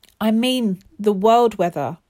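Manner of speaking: usual speaking voice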